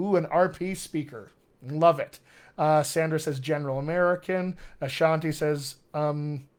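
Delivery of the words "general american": ordinary talk, nothing marked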